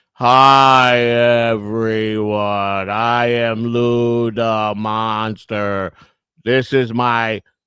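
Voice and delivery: very slow, drawn-out, each word laid out. Mocking how another speaker sounds right now: imitating Lou talking slowly. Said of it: "Lou is talking slow".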